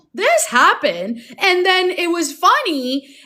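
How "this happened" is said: pointed, raised speaking voice, not screaming. Recounting how a man spoke to a woman who was mad, retelling a raised voice. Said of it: "That's the tone".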